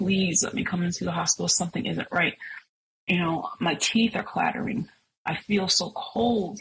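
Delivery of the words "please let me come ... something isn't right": pleading, begging tone. Speaker recounts phoning the doctor's office, retelling begging the doctor's office. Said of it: "And I was like begging them".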